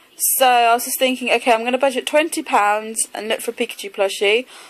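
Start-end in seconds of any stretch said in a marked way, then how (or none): none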